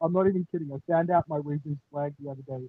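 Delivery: very faint, very quiet, smothered, muffled speech. Talking with others who can't make out the speaker, muffled voice. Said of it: "You sound muffled".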